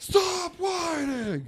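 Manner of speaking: shrill, high-pitched yell. Retelling how a father yelled across a playground at his son: imitating a father yelling. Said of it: "Yells across the entire playground".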